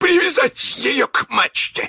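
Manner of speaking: high, roaring bellow. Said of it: "заревел он".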